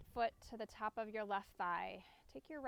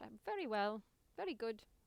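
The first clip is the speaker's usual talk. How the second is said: fake, put-on British accent. Guiding people out of a twist, joking: put-on British accent. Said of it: "My British".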